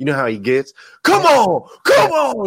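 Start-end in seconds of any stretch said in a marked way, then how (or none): 1.0-2.5 very high, loud, pumped-up, fired-up preacher-like hype. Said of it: "He gets all pumped up".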